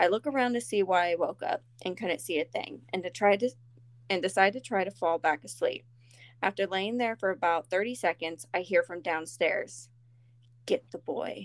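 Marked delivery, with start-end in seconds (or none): 10.7-11.5 very raspy, thready, wispy voice. Reading a story aloud, a voice heard from downstairs: very raspy, wispy voice. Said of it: "in a very raspy, wispy voice".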